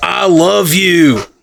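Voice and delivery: menacing Scottish accent. Joking that scottish sounds like fun murder talk: menacing scottish accent. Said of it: "the Scottish can be like".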